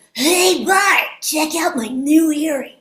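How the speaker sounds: high, loud overbite character voice with lips pushed out. Showing how the speaker does a cartoon impression, Milhouse voice. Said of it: "when I do an impression of Milhouse from The Simpsons, he has this really big kind of like overbite".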